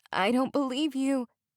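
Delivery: high, hoarse croak of disbelief. Reading a story aloud where the girl answers her captor: croaking. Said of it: "Chloe croaked".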